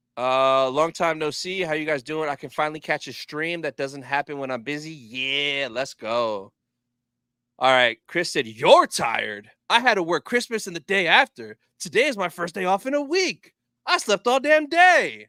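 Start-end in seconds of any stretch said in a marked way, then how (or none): 8.5-15.1 swooping, pitched-up Wild West cowboy voice. Streamer reading a viewer's message aloud in a Red Dead Redemption cowboy voice. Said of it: "He sounds like a guy from Red Dead Redemption".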